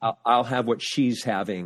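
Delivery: ordinary delivery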